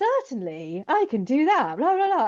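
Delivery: stock chatbot assistant tone. Describing how chatbots sound when bouncing off ideas, doing ChatGPT voice. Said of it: "it has this sort of tone of voice".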